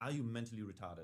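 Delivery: grave, completely earnest, stern official tone. Retelling what the guy checking the speaker asked about a lighter, imitating a most serious voice. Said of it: "in the most serious voice".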